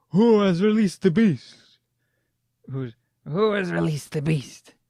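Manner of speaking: hoarse voice edged with panic. Reading a story aloud, voicing a character as a trapdoor rises: raspy voice, hint of panic. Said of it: "The raspy voice has a hint of panic".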